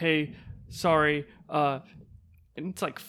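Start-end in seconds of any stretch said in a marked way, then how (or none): 0.0-1.2 imitated near-tearful voice. Retelling how a neighbor came down almost in tears: imitating a tearful neighbor. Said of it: "dude's almost in tears".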